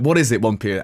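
ordinary talk, nothing marked

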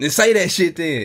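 put-on Memphis accent. Retelling a man's reply to someone who wants a picture: Memphis voice. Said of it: "In his Memphis voice".

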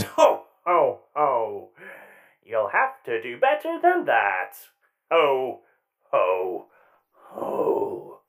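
voice dropped low, rolling out the ho-hos. Narrating a fight, the speaker voices the metallic Santa answering a player's hit: metallic Santa character voice. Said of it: "balcony to land superhero pose in front of you is a very rotund and large metallic Santa with glowing red eyes. / balcony to land superhero pose in front of you is a very rotund and large metallic San".

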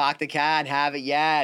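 put-on Boston accent. Mocking how the other speaker says a phrase: mock boston accent. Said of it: "You go".

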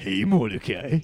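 put-on animated character voice. Showing the line he repeats to get into his character voice. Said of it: "get me in the right like parameters for my voice".

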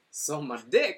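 put-on over-eager, loud, super excited stand-up comedian voice. Contrasting their own deadpan style, imitating super excited comedians. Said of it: "a lot of comedians are super excited".

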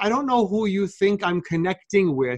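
normal talking voice

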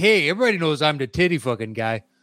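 casual, conversational, plain delivery. Retelling what an acquaintance said: imitating an acquaintance. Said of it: "he was like".

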